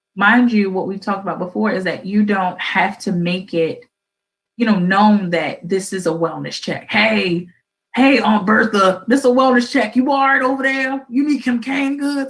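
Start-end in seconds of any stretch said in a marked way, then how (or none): 6.9-12.3 put-on smoker's voice, pitched up. Acting out a wellness check call to an aunt, in a smoker's voice. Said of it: "with that smoker's uh smoker's voice".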